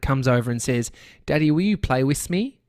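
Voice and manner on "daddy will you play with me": put-on cute little child voice, higher. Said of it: "in his cute little".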